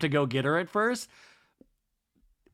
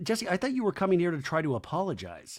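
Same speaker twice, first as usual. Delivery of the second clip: plain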